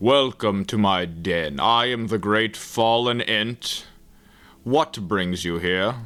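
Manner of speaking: rumbling, tinny, hollow, echoing tree voice. Voicing a great fallen tree greeting a visitor to its den: rumbling tinny hollow voice. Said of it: "The great tree rumbles with sort of a tinny hollow voice".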